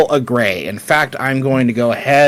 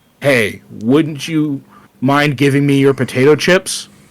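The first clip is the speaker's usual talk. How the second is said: ethereal, otherworldly, ultra-demonic alien voice. Posing a scenario to the Discord, an alien at your door speaks in an ethereal, ultra-demonic voice. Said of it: "in an ethereal, ultra-demonic voice".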